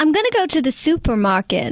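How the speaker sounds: attempted American accent with swooping pitch. Asked by the other speaker to try an american accent, attempted american accent. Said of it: "Can you do an American accent?".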